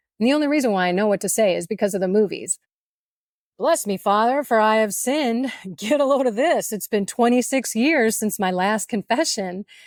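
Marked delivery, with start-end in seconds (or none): none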